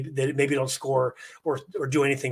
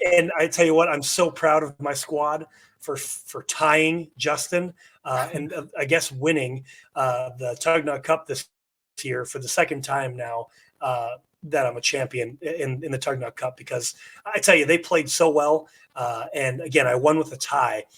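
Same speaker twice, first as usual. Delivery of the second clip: ordinary talk, nothing marked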